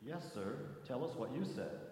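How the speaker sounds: ordinary delivery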